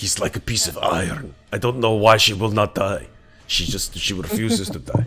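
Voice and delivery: put-on Russian accent. Voicing an undead Russian figure in a game scene: Russian accent. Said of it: "I am gonna lose the accent".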